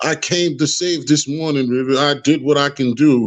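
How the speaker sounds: scornful, self-important, sarcastic, mocking put-on tone. Mocking another speaker's words as if he thinks he's a god: sarcastic mocking imitation. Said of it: "you think you're some type of fucking mythical god".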